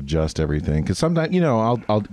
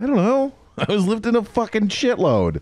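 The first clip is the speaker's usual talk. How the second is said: high, exasperated outburst, blurted out fed up.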